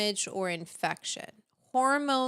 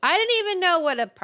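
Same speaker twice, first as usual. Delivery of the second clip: sudden, shrill, very loud, excited yell; 9 semitones higher, 9 dB louder than usual. Speaker talking about Advil and prostaglandins suddenly breaks into yelling. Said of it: "sorry, I didn't mean to yell".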